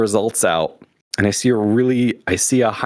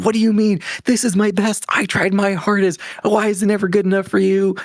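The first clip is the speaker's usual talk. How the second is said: mock teen hissy fit, pitched way up; 10 semitones higher than usual. Retelling the reaction after mom said the scores could be better; retelling own hissy fit. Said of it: "I threw a little hissy fit".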